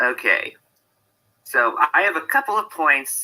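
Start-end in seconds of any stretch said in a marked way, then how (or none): 1.4-3.2 high voice, breaking and cracking slightly. Starting to lay out points in a discussion, voice cracking a little. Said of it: "my voice cracked a little".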